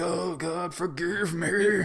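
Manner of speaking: high, very slow, drawn-out, imploring pleading tone. Retelling a movie scene, kneeling and begging: imitating a plea for forgiveness. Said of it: "getting down on his knees like".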